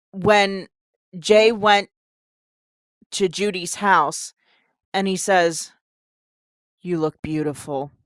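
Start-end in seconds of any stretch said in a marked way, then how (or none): 6.8-7.9 low, dead flat monotone. Reviewing a movie, the speaker mocks Jay's line to Judy: monotone Jay impression. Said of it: "So monotone".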